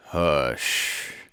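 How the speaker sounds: terrible, exaggerated, very low voice. Narrator reads Eeyore hushing Rabbit's friends and relations, in Eeyore's terrible voice. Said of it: "said Eeyore in a terrible voice".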